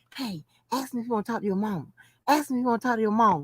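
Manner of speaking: hushed, quiet stage whisper. Retelling half-whispering to a daughter after a breakup: retelling a half-whisper. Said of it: "I whispered to my daughter".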